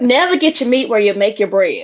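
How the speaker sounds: put-on Louisiana Southern accent. Speaker quoting their mother's old saying, imitating mom's louisiana accent. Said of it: "I'm gonna try to anyway do her accent".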